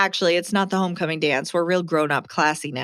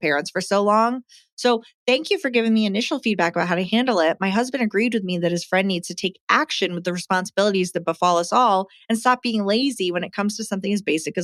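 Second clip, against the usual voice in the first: plain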